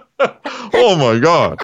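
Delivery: stunned, taken aback, shocked exclamation. A character reacts to Santa Claus, shocked. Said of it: "you sound shocked".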